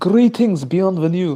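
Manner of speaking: bad, attempted high-pitched Scottish accent. Speaker imagines making their dub character Jacinth Scottish and tries it: bad Scottish accent. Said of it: "That that is not even a Scottish accent".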